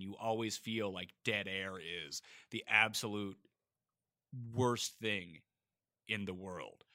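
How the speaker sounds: slow, long dramatic pause.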